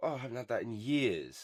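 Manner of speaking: ordinary talk, nothing marked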